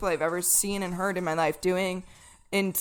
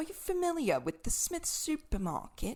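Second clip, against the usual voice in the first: heavy put-on British accent, pitched high; 8 semitones higher, 10 dB quieter than usual. Retelling a lost driver asking for directions: imitating a british accent. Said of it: "the most British guy you've ever seen and heard".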